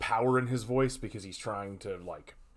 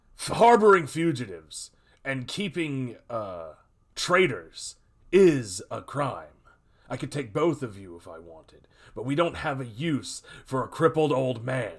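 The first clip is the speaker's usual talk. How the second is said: loud, furious, angry, threatening outburst; 3 semitones higher, 6 dB louder than usual. Voicing a man who slams his fist on the table and threatens: angry threat. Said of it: "the guy slams his fist on the table and says".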